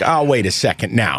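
ordinary talk, nothing marked

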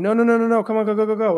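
mock desperate, frantic, panicky freaking-out tone. Speaker retells a horse ignoring the reins; retelling freaking out. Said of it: "I'm like freaking out".

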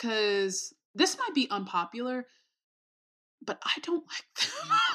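barely audible, soft half-whisper. Admitting an unpopular opinion to the others, whispering a little. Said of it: "You were whispering a little bit".

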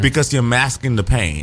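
ordinary delivery

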